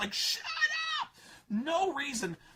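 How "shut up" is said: mock, very high, shrill, screeching scream. Saying how a woman should react to a man who won't listen: imitating a scream. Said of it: "she wouldn't just scream at it".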